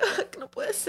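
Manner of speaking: put-on sad voice. Imitating another speaker's reaction after reading a message: imitating someone sad. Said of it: "You're all sad".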